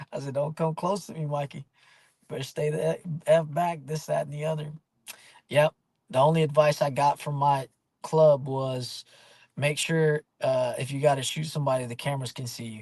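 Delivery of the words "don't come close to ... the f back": plain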